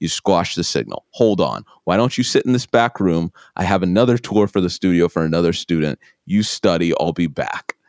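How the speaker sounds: ordinary delivery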